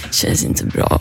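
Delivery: mumbling as if asleep. Retelling being told to go back to bed in the night, retelling a sleepy mumble. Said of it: "jag bara mumlar medan jag går in".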